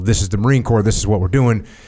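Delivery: ordinary delivery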